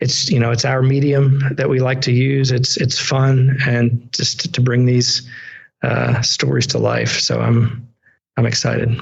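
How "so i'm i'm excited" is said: tired, even, very flat monotone, no lift. Talking about making fan art and saying you're excited, in a very monotone delivery. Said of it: "I said it in a very like monotone".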